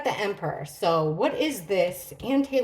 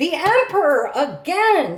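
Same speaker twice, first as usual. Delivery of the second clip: outright loud, high-pitched yelling; 7 semitones higher, 7 dB louder than usual. Reading tarot cards aloud and announcing a card that came up again, yelling. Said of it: "Sorry for yelling".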